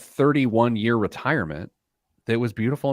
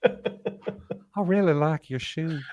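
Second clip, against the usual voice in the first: put-on high, creepy old man voice; 5 semitones higher, 4 dB quieter than usual. After another speaker names a voice they love, doing the creepy old guy from Family Guy. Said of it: "Is it the is it the creepy old guy".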